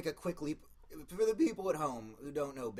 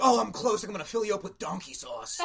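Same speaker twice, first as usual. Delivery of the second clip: loud, pitched-up moan; 7 semitones higher, 8 dB louder than usual. Imagining Guy Fieri during sex, moaning: Guy Fieri impression. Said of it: "Just him being like".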